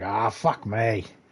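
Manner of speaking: put-on speaking in an Irish accent. Speaker describes Mick getting sidetracked, doing Mick's Irish accent. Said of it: "in his Irish accent he'll be like".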